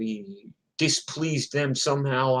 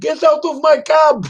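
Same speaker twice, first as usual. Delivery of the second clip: put-on very high, very loud shout in Indian accent; 10 dB louder than usual. Retelling a cab driver screaming at Gigi, a retold shout in Indian accent. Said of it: "I love the Indian accent".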